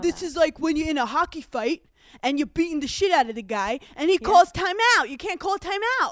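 bad, stupid New York accent. Explaining why a public figure got annoyed, do a bad Dave Portnoy impression. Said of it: "That was like a stupid New York accent".

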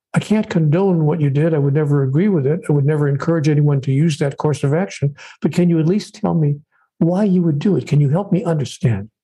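usual speaking voice

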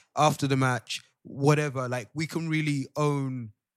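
loud, shouting preacher voice. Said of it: "why are you shouting for".

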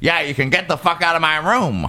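high, really sassy, tossed-off delivery. Retelling a story, quoting Elaine Stritch answering an offer of help, sassy Elaine Stritch impression. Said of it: "Like real sassy".

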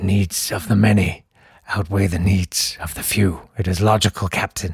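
low, soft, crumbling, failing voice. Speaker describes the bit he does at the glass for Kim: crumbling voice. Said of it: "in a sort of crumbling voice".

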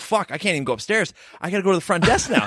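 ordinary delivery

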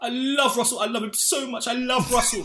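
high-pitched, fond, fawning, adoring gush. Imitating a friend who gushed about loving Russell: imitating a friend gushing. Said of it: "and you were like".

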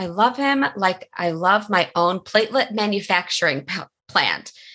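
ordinary talk

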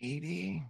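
barely audible, very hushed, guarded voice. Voicing a character who answers a question evasively: said very quietly. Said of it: "he says it very quietly".

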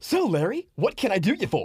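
very high, swooping pitch, drawn out. Imitating how a character's line was played: Matthew Perry impression. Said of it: "was very Matthew Perry too".

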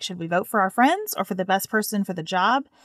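usual speaking voice

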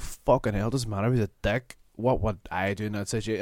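ordinary talk, nothing marked

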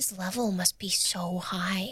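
hushed whisper. A player speaks as the character Parker during a game; whispering quietly. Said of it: "Parker does whisper that quietly".

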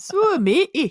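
shrill, very loud, high helium squeal, done badly. Trying a second take at the character's line: bad Ruth impression. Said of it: "that's bad as well".

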